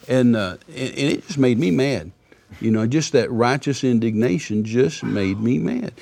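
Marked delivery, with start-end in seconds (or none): none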